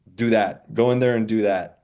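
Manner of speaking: ordinary talk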